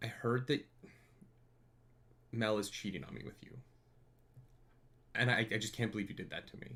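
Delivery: soft, acted, wounded, let-down voice. Acting out someone confronting the speaker about a cheating rumor, imitating a hurt person. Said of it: "come in and you're hurt".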